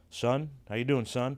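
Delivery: put-on stern tone. Retelling how a stranger greeted the speaker: imitating a stern greeting. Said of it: "like, stern".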